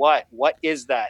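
mock annoyed tone. Retelling questioning a daughter at bedtime: retelling an annoyed question. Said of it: "And I'm very annoyed".

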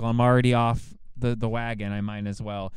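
normal talking voice

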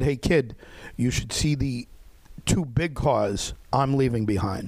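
ordinary talk

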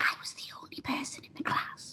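very quiet hushed whisper, barely audible. Telling about winning a sash in a class, whispered. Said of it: "I'm going to whisper this bit".

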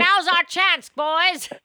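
mock pep-talk, loud, high rallying cheer.

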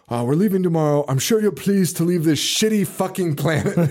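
solemn, preachy, proper sermon-like villain delivery. Retelling a movie scene, quoting the super serious lead villain: imitating a preachy serious villain. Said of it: "It's very preachy".

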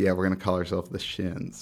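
normal talking voice

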